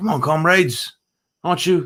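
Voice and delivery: put-on English-accent narrator voice. Describing a book where pigs call everyone comrades, quoting one in an english accent. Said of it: "it's narrated in an English accent".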